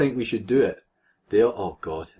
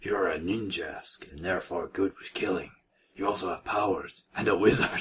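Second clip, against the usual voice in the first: low gravelly voice, quieter; 3 semitones lower, 7 dB quieter than usual. Reading a story character's line aloud, low, gruggly voice. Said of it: "he said in a low but gruggly voice".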